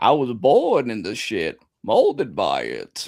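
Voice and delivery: very slow, swooping character voice, each word drawn out. Quoting a movie villain's line while suggesting another player go that route: Bane voice. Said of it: "go down the Bane route. It's like".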